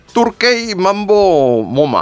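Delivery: slow, high, drawn-out mock-English gibberish.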